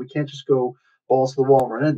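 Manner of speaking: ordinary talk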